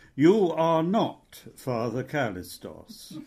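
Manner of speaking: ordinary talk, nothing marked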